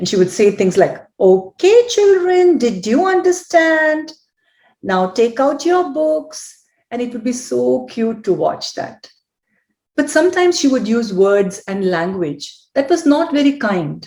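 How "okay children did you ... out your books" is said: schoolteacher voice, pitched high. Retelling a child playing teacher to her doll: imitating a high-pitched teacher voice. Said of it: "the same high-pitched tone of voice like her teacher".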